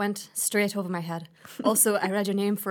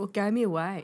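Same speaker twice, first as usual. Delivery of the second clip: ordinary talk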